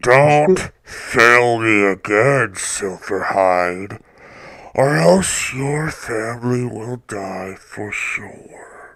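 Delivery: demon voice, garbled, words hard to catch. Voicing a demon addressing another player's character in a game: hard-to-understand demon voice. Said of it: "I'm gonna stop with that voice because obviously no one's".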